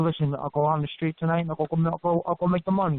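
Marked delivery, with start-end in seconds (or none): none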